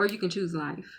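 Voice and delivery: normal talking voice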